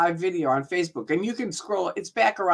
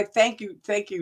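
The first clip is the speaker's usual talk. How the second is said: normal talking voice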